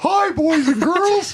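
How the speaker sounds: very high-pitched, loud voice. Prompted to just try it, greeting boys and girls in a Mickey Mouse voice. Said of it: "try it".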